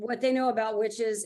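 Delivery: ordinary talk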